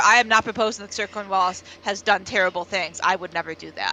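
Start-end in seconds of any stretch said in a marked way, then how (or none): none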